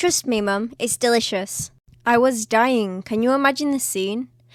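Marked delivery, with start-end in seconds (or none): none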